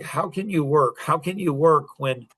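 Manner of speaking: fed-up, frustrated, exasperated tone. Retelling a woman's complaint to her partner: imitating someone frustrated. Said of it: "she was frustrated".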